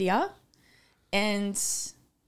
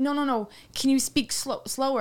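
ordinary talk

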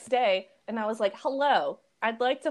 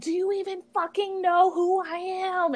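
mock, indignant, pitched-up screaming outburst; 8 semitones higher than usual. Telling a story, acting out a guy screaming while being kicked out of a frat party. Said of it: "he's screaming at them".

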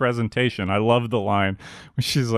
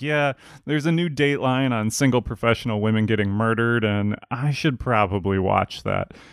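plain

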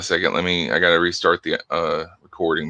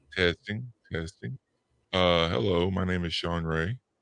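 digitally lowered, out-of-sync voice; 9 dB quieter than usual. Testing his microphone on a call as others say it drops: digitally lowered voice. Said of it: "it's dropping down and it's out of sync".

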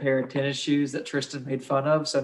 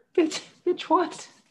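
put-on scared kid voice, much higher. Repeating another speaker's failed German accent, doing a Hitler impression like a scared kid. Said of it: "Hitler sounded like a scared little kid".

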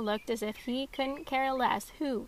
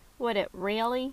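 ordinary delivery

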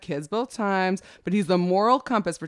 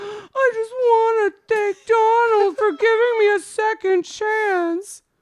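acted, very high, slow, sobbing through words; 14 semitones higher, 6 dB louder than usual. Retelling a young woman's press conference: imitating Tara Connor crying. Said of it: "And then she starts crying, going".

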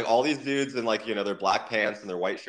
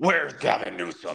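mock gravelly, rough, rasping superhero voice. Recalling a tour, speaker acts out what he thought of shouting: Batman voice. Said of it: "doing like the Batman voice".

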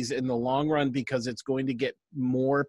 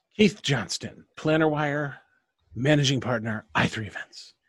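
suave, smooth British spy voice. After the host's handoff, her partner introduces himself and his company; James Bond voice. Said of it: "That was my James Bond voice".

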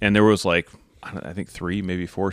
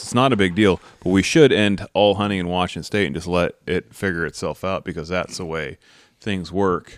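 plain

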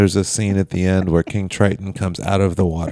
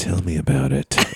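muttered under the breath. Retelling what someone said right away, just loud enough to hear: retelling a line under the breath. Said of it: "it technically was under his breath".

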